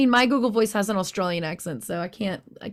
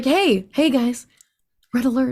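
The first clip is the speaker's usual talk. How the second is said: calm, casual, low-key delivery; 2 semitones higher, 4 dB louder than usual. Showing how a red alert should sound on a ship: calm red alert call. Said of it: "it's not too, panicked".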